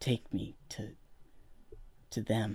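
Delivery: quiet, very slow, soft-spoken, carrying voice. The captain, just steadied after losing her balance, asks to be led over; quiet voice. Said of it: "her voice is quiet".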